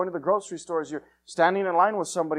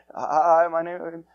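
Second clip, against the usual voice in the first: trembling, nervous, scared little voice, acted. Recalling the first time witnessing to somebody, the speaker acts out a shaky scared voice. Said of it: "you know how your voice is shaky when you're scared".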